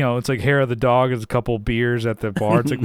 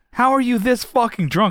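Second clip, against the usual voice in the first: higher-pitched angry yelling; 11 semitones higher than usual. Retelling the tour manager scolding the drunk band: imitating Austin yelling. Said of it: "And he's, like, yelling at us".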